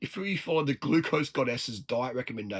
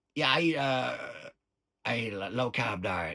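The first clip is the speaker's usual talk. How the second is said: bad put-on American accent, much slower; 2 semitones lower than usual. Right after doing an Aussie accent, switch to a bad American accent. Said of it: "That's a bad American accent".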